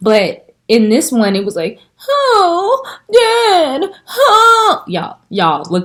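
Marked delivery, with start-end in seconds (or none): 2.1-4.8 play-acted very high sobbing whimper, drawn-out "oh". Retelling a scene from the new movie: imitating Simba's whimper voice. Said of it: "his whimper voice is annoying".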